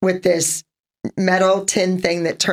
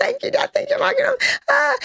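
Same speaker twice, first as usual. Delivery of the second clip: very high, screamed, way up in pitch. Retelling the moment of thanking dad for a car: imitating own past screaming. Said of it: "I'm screaming".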